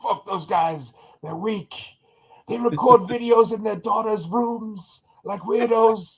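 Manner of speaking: very high, slow, drawn-out character voice. Doing an impression of Saw Gerrera dismissing the other rebels: Saw Gerrera impersonation. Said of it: "That's my Saul Guerrero per-, impersonation".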